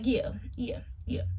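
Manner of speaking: soft, unvoiced whispered yes.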